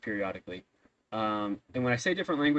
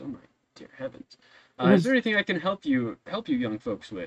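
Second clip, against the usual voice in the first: put-on high, raised older gentleman voice; 5 semitones higher, 5 dB louder than usual. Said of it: "slightly older gentleman".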